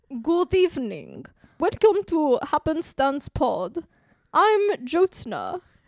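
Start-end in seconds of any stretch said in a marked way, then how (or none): 0.2-3.7 put-on vampire voice. Podcast host opens the show at a co-host's urging, in a mock vampire voice. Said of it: "you do it".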